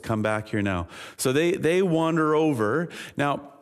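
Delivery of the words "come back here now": put-on calm, even voice, much lower. Retelling calling the splashing boys back over, re-enacting a calm call. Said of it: "It's just this calm voice".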